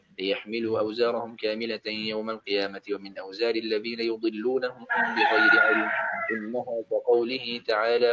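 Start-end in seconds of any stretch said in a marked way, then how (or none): none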